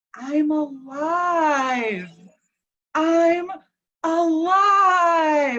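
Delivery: very slow, drawn-out, play-acted sobbing and bawling. Speaker retelling how a man sat up and spoke, imitating him bawling. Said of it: "he just starts bawling, and he goes".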